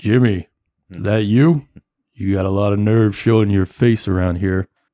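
deep, chilling, menacing, threatening voice. Narrating a scene where Jimmy hears a voice behind him: deep chilling Frank Malone voice. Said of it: "like a deep voice that sends a chill down your spine".

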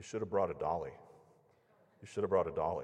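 mock condescending, low, fast, repeated. Retelling the man who gave bad news repeating himself, mock-condescending repetition. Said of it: "he's acting like I'm a stupid 5-year-old child".

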